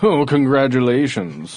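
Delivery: put-on British accent. Mocking people who formed a country long ago: King George voice. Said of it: "just so I can do the accent again".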